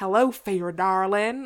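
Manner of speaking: put-on strong, broad southern American accent. Picturing how the greeting line would sound, in a really southern American accent. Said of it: "in like a really southern American accent".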